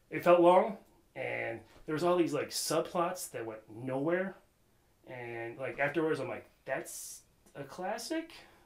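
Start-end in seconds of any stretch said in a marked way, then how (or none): 6.6-8.3 rising, question-like intonation on "classic". Recalling a reaction after watching a long movie, rising tone on classic. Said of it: "Kind of upward inflection".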